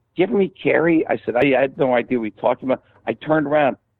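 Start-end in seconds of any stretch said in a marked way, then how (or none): 0.2-1.1 put-on high-pitched voice with a Pittsburgh accent. Retelling a conversation with Gene Kelly, doing a Gene Kelly impression, high voice. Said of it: "he had that kind of high voice, Pittsburgh".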